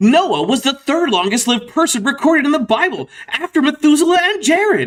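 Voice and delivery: thrilled, eager, excited, very high-pitched read. Rereading a line aloud to get the right intonation: more excited. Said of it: "I have to say this more excitedly".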